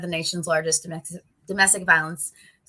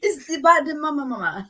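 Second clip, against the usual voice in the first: put-on thick Portuguese accent, higher; 8 semitones higher than usual. Quoting a friend, say it in his thick portuguese accent. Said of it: "he's got like a thick like Portuguese accent".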